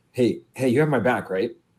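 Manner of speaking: acted anxious, paranoid, nervous pleading tone. Voicing a character looking around a bar, asking a companion: paranoid in-character plea. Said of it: "almost a little, uh, a little bit paranoid".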